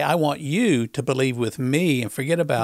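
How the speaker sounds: usual speaking voice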